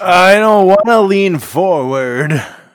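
very loud, high old-timey cartoon voice. Asked to speak closer to the microphone, answering like an old cartoon character. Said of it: "You just sounded like a cartoon character, like an old one".

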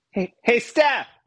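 very high, loud yell. Calling out to someone out of earshot, yelling to someone. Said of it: "I'm just gonna yell right now".

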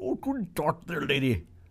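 put-on Scottish-sounding accent. A podcast host greets a listener who joined the show, in a Scottish-sounding accent. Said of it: "Are you Scottish?".

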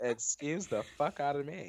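ordinary delivery

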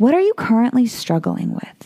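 gentle, soft, calm, soothing coaching tone. Demonstrating asking a consumer an open-ended question, in a soft, calm voice. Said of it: "that's my like soft, calm voice".

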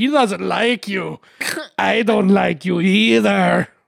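imitated Scottish accent. Retelling what a guy's friend said at a bar, scottish accent impression. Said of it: "Why did he sound like fucking Scottish?".

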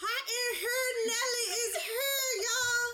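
put-on very high, top-of-the-lungs, drawn-out drunken yell. Retelling their own shout across a club: retelling a drunken yell. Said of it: "yelling to the top of my lungs".

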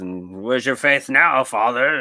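loud, possessed, devilish demonic voice. Retelling a film scene where she taunts the Father: demonic voice. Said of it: "she started talking in the demonic voice".

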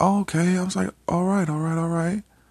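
flustered high voice.

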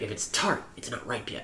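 put-on creepy whispering. Retelling a neighbor offering a Japanese plum: imitating a creepy whisper. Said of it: "Why are you whispering the whole time".

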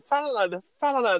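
blurted, high, urgent shout. Retelling a class moment, acting out Laura yelling while the teacher talks: retelling Laura's shout. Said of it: "Aí a Laura gritando".

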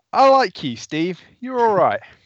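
laughing mid-line. After staring someone in the eyes for a moment, bursting out laughing. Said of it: "burst out laughing and be like".

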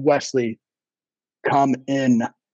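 eerie, sinister, low creepy voice. Retelling what a woman said during a visit, imitating a low, creepy voice. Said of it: "with this low, creepy voice".

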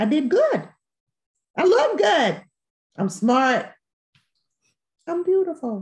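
high, loud, proud delivery.

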